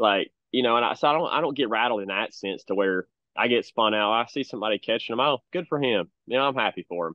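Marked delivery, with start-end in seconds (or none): 5.2-7.1 swooping, sarcastic sing-song, overdone cheer, acted out. Retelling a reaction to someone else catching fish: imitating own sarcastic remark. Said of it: "just kinda being sarcastic with that".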